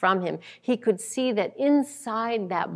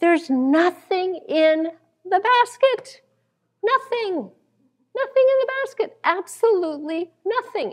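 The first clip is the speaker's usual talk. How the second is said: put-on very high, astonished speech bursting through laughter; 11 semitones higher, 4 dB louder than usual. Storyteller acts out a husband opening his wife's basket, retelling astonished laughing speech. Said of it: "he breaks out in astonished laughter".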